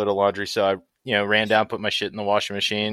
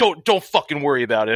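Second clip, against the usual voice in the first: put-on angry man voice, higher pitch; 5 semitones higher than usual. Retelling his reply after the washer burnt a hoodie: imitating an angry man. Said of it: "he was just so fucking pissed".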